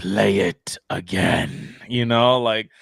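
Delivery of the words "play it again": rough, creaky villain voice. Retelling an actor's appearance after the trailer, quoting him in his Maul voice. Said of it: "does his Maul voice".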